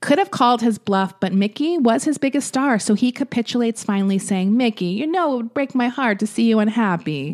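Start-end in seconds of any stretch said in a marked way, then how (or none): 4.6-7.3 put-on schmoozy, charming Italian accent. Retelling how he capitulates to his biggest star, Louis B. Mayer in Italian accent. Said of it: "Why did you make him Italian?".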